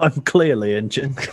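put-on failed Russian accent that drifts into British. Quoting a movie character's line: bad Russian accent sounding British. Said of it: "That's British".

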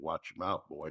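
normal talking voice

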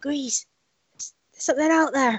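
half-whispered, under the breath, West Country vowels. Speaking to Grease in a tent shared with the others, use a half-whispered West Country accent. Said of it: "I don't know how to whisper in a West Country accent".

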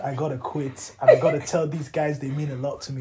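ordinary delivery

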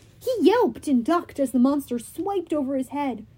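plain

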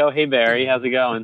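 imitated nonchalant, casual tone. Retelling waving at a neighbour while sneaking to the door: imitating a nonchalant greeting. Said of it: "nonchalant turn and, like, wave".

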